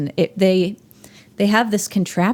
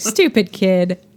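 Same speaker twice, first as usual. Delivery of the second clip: plain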